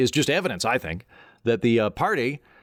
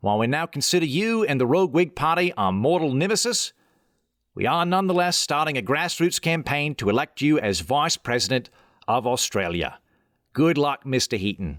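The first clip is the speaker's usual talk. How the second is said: clumsy, bad Australian accent, fast. Speaker reading a listener's letter from Perth, Australia, in a bad Australian accent attempt. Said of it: "I'm going to try the accent".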